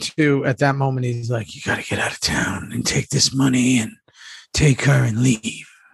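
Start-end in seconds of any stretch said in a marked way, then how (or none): 1.6-5.6 whispered all through, no voice. Retelling a scene partner's line from a scene: imitating Jax whispering. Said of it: "Jax was in full whisper mode".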